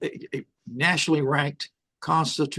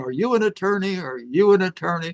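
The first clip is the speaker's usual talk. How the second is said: mock enraged, furious, repeated screaming; 4 semitones higher, 4 dB louder than usual. Retelling a courtroom clash with a lawyer: imitating someone screaming. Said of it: "Bill screaming at me, red in the face, screaming".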